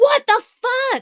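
put-on shrieking, very high-pitched screaming outburst. Narrating a scene where a woman's phone rings, imitating her screaming. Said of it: "she screams".

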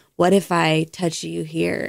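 slow, suggestive, erotic audio-play voice. Acting out a line from an erotic audio play: imitating an erotic audio play. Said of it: "and they'll be like".

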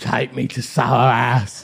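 put-on sloshed, sloppy drunken slur, words smeared. Retelling what a very drunk person said in an alleyway: imitating drunk speech. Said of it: "I've never seen this kid that drunk".

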